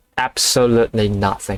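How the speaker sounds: usual speaking voice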